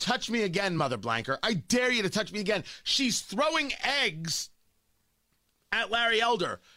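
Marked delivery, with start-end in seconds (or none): 0.0-2.6 put-on, hot-tempered screaming, daring tone. Retelling how a woman with eggs screamed at people: imitating a woman screaming. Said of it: "this woman starts screaming at them".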